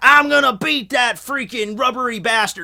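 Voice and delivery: put-on odd southern pirate accent. Imagining a pirate show character getting up on an island, weird southern pirate accent. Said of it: "southerny accent mixed with, like, a bunch of, like, pirate terms".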